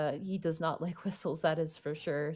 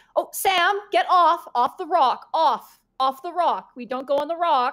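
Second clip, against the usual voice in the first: very high, slow, stern scolding tone; 10 semitones higher, 7 dB louder than usual. Voicing a caretaker who turns to tell a child off the rock: caretaker telling a child off. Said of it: "she turns and goes".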